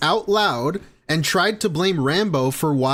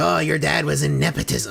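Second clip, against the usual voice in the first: put-on creaky, rough troll voice. Retelling how he reads a troll super chat aloud, in troll voice. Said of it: "doing this like troll voice".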